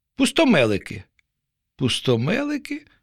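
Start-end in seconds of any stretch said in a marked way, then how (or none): 1.8-2.8 baffled, uncomprehending, puzzled, high-pitched voice. Narrator reads a fish repeating an unfamiliar word back: puzzled. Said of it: "не второпала риба".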